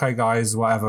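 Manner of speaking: mock calm, put-on steady voice. Retelling how the speaker's dad reacted when his team lost, imitating calm dad. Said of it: "but would be calm".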